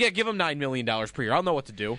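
usual speaking voice

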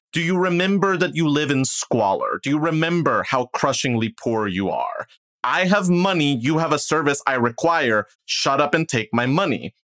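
withering, cutting, crushing dressing-down tone. Retelling a play scene where one character scolds the apothecary, acting out a crushing dressing-down. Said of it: "slightly crushing, like dressing down".

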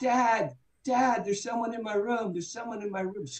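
mock, frantic, frightened, very high screaming. A father re-enacts his son screaming for him at night: retelling a scream. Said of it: "my son screams".

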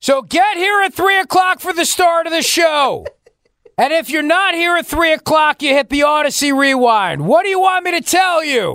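high, swooping, direct yell. Show host addressing Jacques Gary directly on air, yelling at him. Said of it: "I'm going to yell at Jacques Gary right now".

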